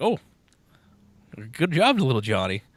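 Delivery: mock stunned, taken aback, loud and swooping. Telling a joke, quoting the teacher's reply: imitating a stunned teacher. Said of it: "the teacher's kind of fucking stunned".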